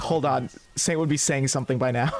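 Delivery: ordinary talk, nothing marked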